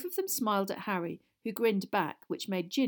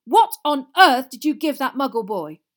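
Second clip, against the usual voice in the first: livid, very loud, high, furious shout; 5 semitones higher, 13 dB louder than usual. Mr. Weasley, angrier than ever, confronts Fred; shouting. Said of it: "he shouted".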